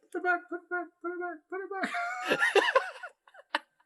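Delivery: faint, barely there, very high, far-off voice. Describing a scream heard from underneath: faint distant voice. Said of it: "you hear this faint".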